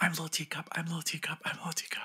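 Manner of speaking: hushed, quiet, high little whisper under breath. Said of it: "Quietly whispering it".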